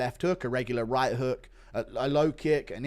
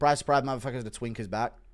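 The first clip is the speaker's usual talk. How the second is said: usual speaking voice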